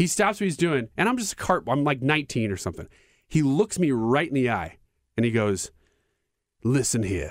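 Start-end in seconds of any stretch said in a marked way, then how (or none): 6.6-7.3 imitated British man's accent. Retelling what a golfer told a young cart worker: British accent. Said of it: "And he's British".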